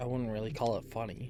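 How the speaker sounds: muttered under breath. Voicing a character who answers a remark about a funny bunch: said under his breath. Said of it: "He says that under his breath".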